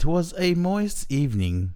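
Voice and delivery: put-on English accent. Asked for an opening line of a text, answering in a put-on English accent. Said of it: "Is it the English accent?".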